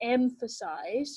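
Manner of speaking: "emphasize" drawn out very slowly and deliberately. Explaining a rubric, showing an important word: 'emphasize' drawn out slowly. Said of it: "say emphasize really slowly".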